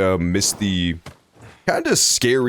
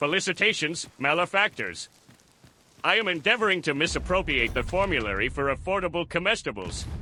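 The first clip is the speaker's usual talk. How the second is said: soft cartoon voice, pitched way up; 9 semitones higher, 7 dB quieter than usual. Joking after talk of attacks, the speaker does a Plankton voice. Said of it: "it's a pretty good Plankton voice".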